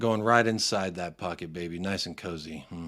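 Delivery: creepy, suggestive, very low, quiet murmur. Answering a super chat during a panel show, in a pervy tone. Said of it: "listen to his tone. The way he said it, he said it really like pervy".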